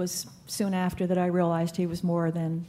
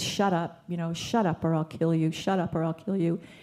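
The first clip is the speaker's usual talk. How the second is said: put-on, menacing voice through clenched teeth. Retelling what he said on first arriving: imitating a threat through clenched teeth. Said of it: "he had said to us with clenched teeth".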